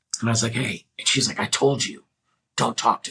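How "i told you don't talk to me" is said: human growl, not a dog's. Retelling what a woman at a party told him, imitating a growling voice. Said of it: "she got like this growl in her voice".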